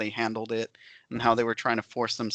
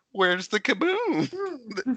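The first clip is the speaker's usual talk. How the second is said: very high, squeaky, swooping cartoon voice; 12 semitones higher than usual. Suggest a clip for a listener to make for Botchamania, in a Marvin the Martian voice. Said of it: "Marvin the Martian going like".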